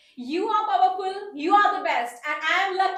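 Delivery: overacted, very loud, high, exaggerated dramatic delivery. Saying a prompted line on camera, overacted. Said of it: "ये बड़ा थोड़ा सा ओवर action में आ गया".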